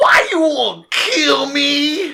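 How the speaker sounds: loud, very high, very slow, drawn-out put-on voice. Retelling a man who walked up to the speaker, in a loud put-on voice. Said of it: "I can't do this voice without being loud".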